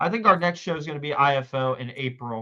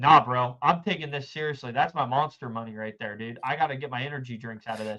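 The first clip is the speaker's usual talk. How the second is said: straight-faced, fully earnest, dead-serious deadpan delivery. Retelling a poker player refusing to go all in: imitating Rob, dead serious and straight-faced. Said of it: "dead ass, straight faced and all".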